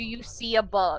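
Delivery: ordinary delivery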